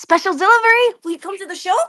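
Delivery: very high-pitched, cartoonish put-on character voice. Repeating the voice given to Bin, like a high-pitched Tails. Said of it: "a high-pitched Tails".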